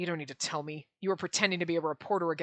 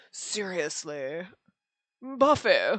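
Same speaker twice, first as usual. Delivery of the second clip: put-on prissy, snobby, stuck-up preppy rich-boy voice; 4 dB louder than usual. Showing the voice a game character should have: prissy rich boy voice. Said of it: "You know the voice I'm thinking of where he's like".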